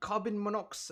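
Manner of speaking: put-on British accent. Speaker imitates their house alarm's announcement: put-on british accent. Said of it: "No, that's British".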